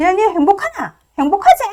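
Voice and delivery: confrontational tone. Retelling a friend's sudden phone call: imitating a friend's picking-a-fight tone. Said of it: "갑자기 시비조로 막 나오는 거예요".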